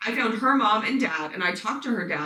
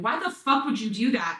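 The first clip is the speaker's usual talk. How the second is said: mock yelling, acted out; 2 semitones higher than usual. Retelling the moment she confronted the man who hurt her, retelling yelling at him. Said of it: "I'm yelling at him".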